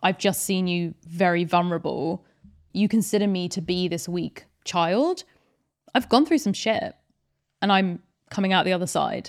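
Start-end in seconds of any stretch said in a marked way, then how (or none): none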